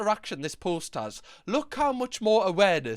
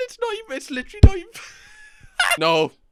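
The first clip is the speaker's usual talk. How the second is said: very loud, very high, laughing through words; 12 semitones higher, 9 dB louder than usual. Reacting to a silly message exchange, laughing while talking. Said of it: "I'm laughing".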